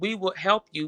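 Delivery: ordinary delivery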